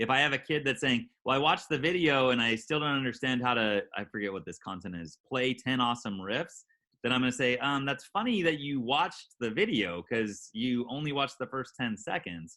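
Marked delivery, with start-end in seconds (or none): none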